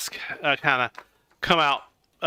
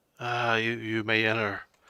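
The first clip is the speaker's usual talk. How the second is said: flat, soft, slow, drained of feeling; 4 semitones lower, 5 dB quieter than usual. Game narrator voicing a figure who lets the players enter, emotionless. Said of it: "very emotionless".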